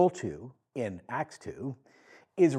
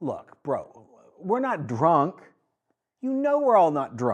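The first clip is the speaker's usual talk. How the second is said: sarcastic, almost joking tone; 3 semitones higher than usual. Retelling what Peter said to the crowd: imitating Peter's sarcastic joking. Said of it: "Peter says sarcastically, almost half jokingly".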